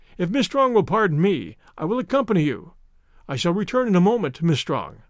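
plain

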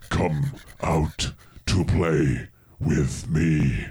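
crackling, inhuman creature voice. Reading a story, the narrator voices the thing behind the wood, crackling and inhuman. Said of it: "a crackling, inhuman voice".

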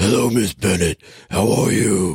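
gravelly, gruff, rough rasp like a longtime smoker.

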